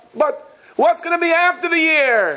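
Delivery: very high yell called upward. Retelling a man yelling up to the rafters, imitating someone yelling. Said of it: "he yells up".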